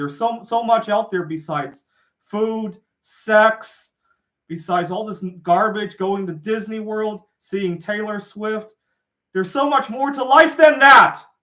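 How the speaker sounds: genuinely angry outburst. A speaker who says they sound angry because they really are, angry. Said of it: "I know I sound angry because I really am".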